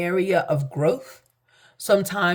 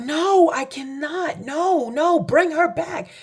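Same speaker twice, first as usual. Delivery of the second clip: mock screaming, very high and very slow; 10 semitones higher than usual. Retelling what their mother said in front of the doctors: imitating mother screaming. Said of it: "She was screaming".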